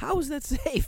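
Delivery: impassioned, voice climbing very high. Objecting to an idea, the speaker gets passionate, pitch rising. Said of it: "the pitch goes up my voice".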